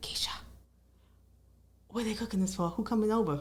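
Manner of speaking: half-whispered under the breath. Retelling what he asked about the big family meal: imitating Rashad half-whispering. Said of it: "he was whispering like".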